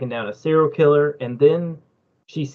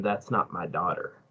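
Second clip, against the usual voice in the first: put-on tearful crying, very low, soft and hushed; 8 semitones lower, 11 dB quieter than usual. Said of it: "this guy crying".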